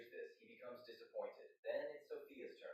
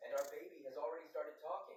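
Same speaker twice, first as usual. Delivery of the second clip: plain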